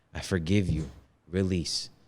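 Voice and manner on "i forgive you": put-on tearful crying voice, quieter. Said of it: "And I'm crying".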